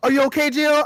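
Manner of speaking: showy, dramatic heroic tone. Retelling a game scene where Carlos jumps through fire: dramatic Carlos voice. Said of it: "he jumped through all dramatic".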